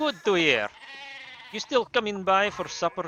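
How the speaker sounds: awful, bad, put-on fake German accent. Improvising a morning greeting scene at the Abbey, bad German accent. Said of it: "why am I doing a".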